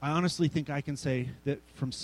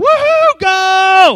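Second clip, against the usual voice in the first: very high, very loud, shrill, booming jubilant scream; 19 dB louder than usual. Retelling watching an 80-yard Broncos pass, acting out his screaming. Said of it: "I'm screaming and jumping and yelling".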